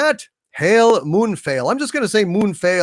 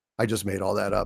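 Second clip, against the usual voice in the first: ordinary talk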